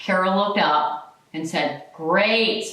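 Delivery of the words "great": mock sarcastic tone. Retelling what a preceptor said to a new nurse: imitating a sarcastic reply.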